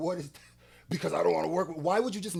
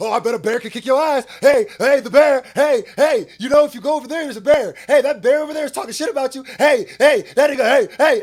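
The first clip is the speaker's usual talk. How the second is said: very loud, high-pitched, needling taunting; 6 semitones higher, 14 dB louder than usual. Imitating the other speaker egging on a fight: imitating someone instigating.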